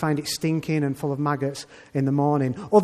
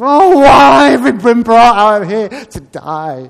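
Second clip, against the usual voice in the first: put-on loud, high, whiny teenage adolescent voice; 7 semitones higher, 13 dB louder than usual. Voicing the grumbling people in the desert, in a mock whiny teenage voice. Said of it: "kind of a whiny teenage voice".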